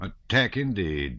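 offhand, bored, uninterested, can't-be-bothered tone. The colonel answers Denisov's request to attack, bored. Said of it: "said the colonel in a bored voice".

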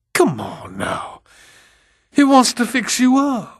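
harsh, panted words at very high pitch. At a door, a woman coaxes a girl in bed to come out, panting harshly. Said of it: "she panted harshly".

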